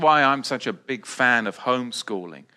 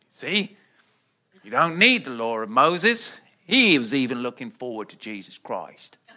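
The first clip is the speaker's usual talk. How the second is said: put-on rustic old farmer voice and accent. Mimicking what the traditional church tells people, old farmer accent. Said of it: "what accent was that?".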